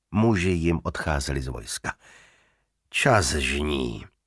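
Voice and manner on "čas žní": in disgust, disgusted tone. Narrator reads a character's short remark, said with disgust. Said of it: "řekl znechuceně Ravn".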